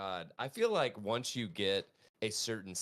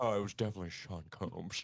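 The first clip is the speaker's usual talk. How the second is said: put-on Scottish accent. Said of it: "you have to do it with the [name] accent".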